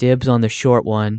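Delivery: mock deadpan, straight-faced delivery. Retelling what a man said while looking over at the speaker's dad, retelling a deadpan line. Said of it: "totally straight face, deadpan".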